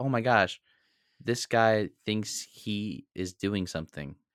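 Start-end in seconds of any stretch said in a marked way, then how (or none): none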